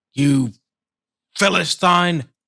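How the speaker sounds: high, loud shouted voice. Voicing a character approaching a creature to punch it: shouting. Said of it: "shouts out".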